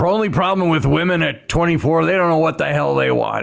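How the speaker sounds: put-on, mock-gruff voice. Speaker retelling advice a man gave him about his younger wife, imitating a gruff voice. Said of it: "he had a gruff voice".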